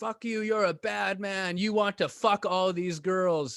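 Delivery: mock angry yelling outburst in broken English. Retelling how a woman yelled at him in front of everybody: imitating yelling in broken English. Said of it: "she starts yelling at me in front of everybody".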